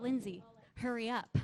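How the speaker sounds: usual speaking voice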